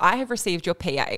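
ordinary delivery

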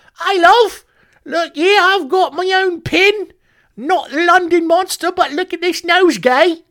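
bad, high-pitched put-on cockney accent. Imagining a man walking around with a pin, awful high-pitched cockney accent. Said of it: "just got to be this awful high-pitched cockney accent".

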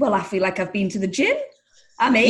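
ordinary talk

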